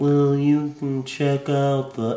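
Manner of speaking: put-on slow drawling voice. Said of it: "as Gerard did the impression, he was like".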